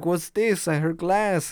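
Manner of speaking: thick put-on Spanish accent. Retelling grandpa coming downstairs after hearing glass: grandpa's heavy Spanish accent. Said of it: "with his heavy Spanish accent".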